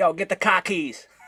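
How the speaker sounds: put-on Bostonian accent. Imagining someone at a car, the speaker acts them out imitating a Boston accent. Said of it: "somebody with a Boston ac- accent go up to a car and".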